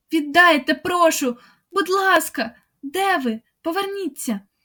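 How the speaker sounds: frantic, high, panicked, pleading calling out. [name] calls out into the darkness after those who left, screaming in panic. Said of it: "репетувала Марта у паніці".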